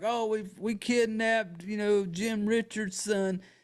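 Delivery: play-acted frantic hysterical wail, slow, name dragged out. Recounting Evie yelling to her parents, retelling Evie's hysterical yell. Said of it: "She's like yelling like".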